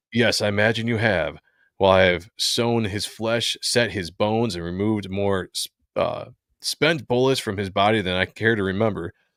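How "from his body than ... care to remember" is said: ordinary talk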